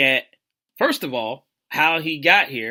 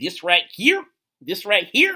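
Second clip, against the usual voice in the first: put-on, bad impersonation, swooping high, sing-song; 6 semitones higher, 3 dB louder than usual. Opening a sports topic on the Cowboys: Katt Williams voice. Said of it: "that's a horrible impersonation".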